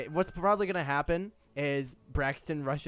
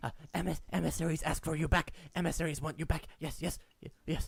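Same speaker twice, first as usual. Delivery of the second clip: nervous, jittery, trembling, shaky, rattled stammer; 2 semitones higher, 3 dB quieter than usual. Voicing a nervous ratling who tells the party the emissaries want them back: nervous, shaking ratling voice. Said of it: "He is shaking".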